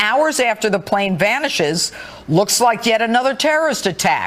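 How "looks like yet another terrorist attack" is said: ordinary talk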